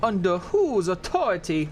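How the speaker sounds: high, goofy, stupid, silly put-on voice. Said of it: "still doing stupid voices".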